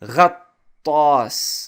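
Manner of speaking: heavy, doubled, stressed ta in ghattas. Explaining arabic pronunciation to learners, stress on ta in ghattas. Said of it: "notice how I stress the ta".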